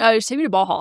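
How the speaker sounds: playful put-on guy's voice. Imitating him wanting to go to Baja: Baja Patrick voice. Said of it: "The way you say Baja is so funny".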